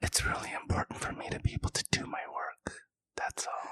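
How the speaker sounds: very quiet, hushed, barely voiced whisper. After an apology for not being truthful, answering in a whisper. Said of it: "now you're whispering".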